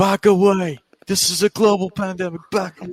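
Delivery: put-on shouted in a British accent, pitched high. Asked to do it again, retelling what Will Ospreay was screaming, in a British Will Ospreay voice. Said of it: "good British Will Osprey voice".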